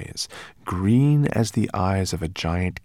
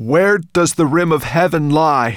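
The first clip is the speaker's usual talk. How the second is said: very loud, raised, pitched-up voice; 8 semitones higher, 9 dB louder than usual. A narrator reads a character's question in a story, in a loud voice. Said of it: "said in a loud voice".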